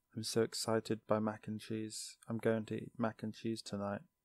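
put-on very quiet, flat, emotionless monotone drone. A host mocks how a character talks, doing a flat emotionless Cody impression. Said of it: "He just has no emotion in his voice at all".

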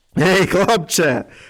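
speaking through laughter. A narrator reads a bear calling down to a boy up an oak, laughing. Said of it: "регоче униз ведмідь".

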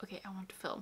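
soft, eager, unvoiced whisper under the breath.

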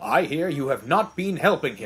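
ordinary delivery, nothing marked

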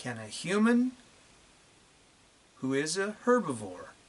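drawn-out, very slow, with long pauses. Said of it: "I'll say it one more time, very slowly".

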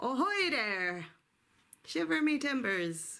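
put-on pirate accent, only half-managed. Talking about a globe for the pirates' next voyage: attempted pirate voice. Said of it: "I just can't do the pirate voice".

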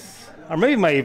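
plain

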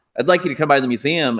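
ordinary talk, nothing marked

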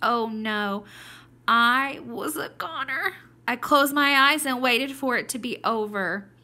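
scared, terrified read-aloud voice. Reader modeling the hamster Seymour's line for listeners, terrified voice. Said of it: "match your voice just like I did".

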